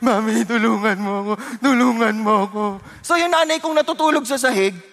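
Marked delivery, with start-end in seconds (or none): 0.0-2.6 put-on tearful crying, slower. Retelling running to the mother for help, reenacting crying plea. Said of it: "Umiyak ako".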